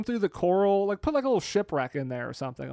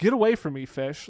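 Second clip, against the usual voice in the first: ordinary talk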